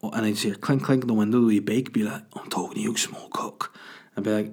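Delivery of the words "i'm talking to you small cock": low, breathy whisper in a little talking-bird voice. Acting out a talking bird at the window: Ray Winstone voice. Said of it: "'cause Ray Winston vo-, voices the birds".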